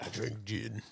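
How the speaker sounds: low, hushed put-on voice, grave and confessional.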